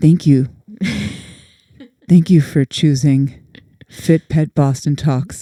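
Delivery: put-on on-air radio announcer voice. Joking about an intro for their dog training podcast, in a radio announcer voice. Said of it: "turning into my radio voice".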